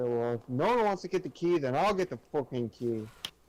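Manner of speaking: annoyed, out-of-patience, irritated grumble. Speaking in character after no one volunteers to fetch the key: irritated. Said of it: "I kinda look irritated".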